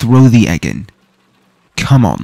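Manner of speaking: loud, urgent, pleading tone, calling out.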